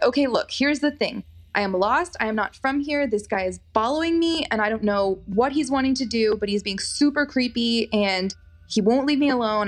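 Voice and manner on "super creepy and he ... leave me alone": ordinary talk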